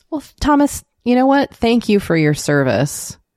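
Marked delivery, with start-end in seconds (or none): 1.5-3.1 sarcastic, mock-grateful tone. Thanking a historical figure for ripping people off: sarcastic. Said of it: "I'm being sarcastic".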